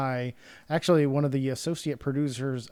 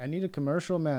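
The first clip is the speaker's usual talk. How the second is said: put-on full Jamaican accent; 4 semitones higher than usual. Quoting a friend who asks him for a commercial, in a jamaican accent. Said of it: "That was a total Jamaican accent there".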